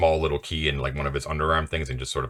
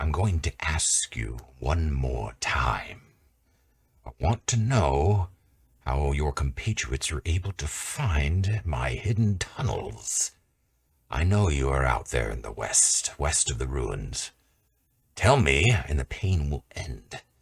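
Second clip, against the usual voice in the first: slow half-whisper carrying through the hall. Narrator voicing a man questioning a prisoner in a chamber, half-whispery voice. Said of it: "his whispery voice that sort of kind of carries".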